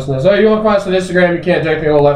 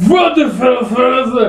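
screamed put-on German accent, much higher; 9 semitones higher than usual. Imitating a game's voice actors saying its title, screaming in fake German accent. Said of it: "They say it in German, like screaming at you".

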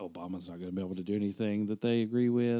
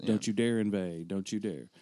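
ordinary talk

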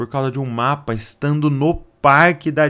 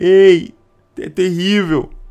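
mock-despairing voice, acted-out despair; 4 semitones higher, 4 dB louder than usual. Retelling what ten returning scouts said about the land, retelling a despairing voice. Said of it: "Uma voz de desespero e começam a falar".

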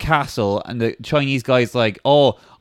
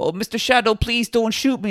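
higher-pitched, begging, pleading voice; 9 semitones higher than usual. Retelling a film scene where a man begs: imitating a man begging. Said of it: "he's like".

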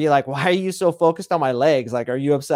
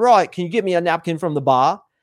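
put-on Australian accent. Retelling a woman asked to request a napkin, in an australian accent. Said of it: "ask me in an Australian accent".

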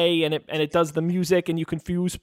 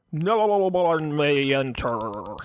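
bad put-on monster voice, pitched lower; 3 semitones lower than usual. The storyteller voices the Minotaur answering the players at the temple: like Richard Nixon underwater. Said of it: "He sounded like a Richard Nixon underwater".

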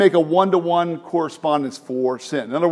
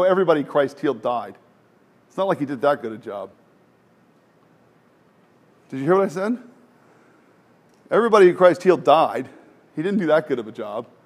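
facetious, sharp-edged, sarcastic tone; 4 dB quieter than usual. Speaking to an audience, the speaker makes a deliberately facetious remark: sarcastic. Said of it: "I'm being sarcastic".

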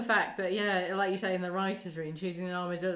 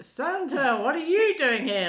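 acted-out, high, loud, thoroughly irritated outburst; 7 semitones higher, 7 dB louder than usual. Retelling Ross greeting Santa: imitating Ross, really annoyed. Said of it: "Like, really annoyed".

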